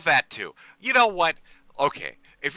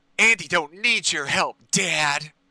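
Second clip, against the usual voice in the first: deliberately grating, annoying fake voice and cadence.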